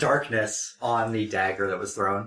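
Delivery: ordinary talk, nothing marked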